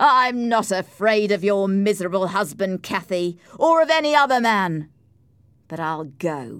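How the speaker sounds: loud shout. Narrator reads a man answering a woman who told him to go, shouting. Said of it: "Heathcliff shouted".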